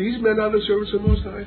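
very high-pitched, fast, jeering, mocking demonic voice. Speaker voices the woman who kept bugging Paul: mocking demonic voice. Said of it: "with a mocking demoniacal voice".

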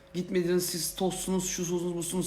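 mocking, high-pitched voice.

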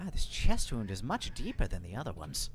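private aside, spoken half to oneself. Voicing a halfling overheard by others: muttered under the breath. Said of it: "under the breath of the, uh, halfling".

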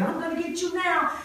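put-on high, loud, taunting little boy voice.

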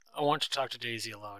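ordinary delivery

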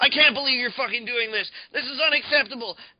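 very loud, very high, shrill indignant, outraged outburst. Imitating a customer paying at GameStop while complaining: imitating outraged gamers. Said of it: "being like".

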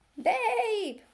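eager, very high sheep's bleat. The sheep answer her question about the pig: eager bleat. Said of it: "bleated the sheep eagerly".

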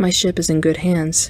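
ordinary delivery

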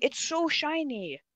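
high-pitched annoyed tone. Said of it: "You sound genuinely annoyed".

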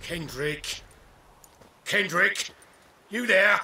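loud, high calling out. Searching a foggy estate for a missing partner: calling out loudly. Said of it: "Not so loud".

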